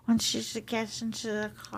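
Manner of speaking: mumbled, slurred put-on English accent. Repeating the second part of the line to Penny, in a slurred English accent. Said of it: "very slurry".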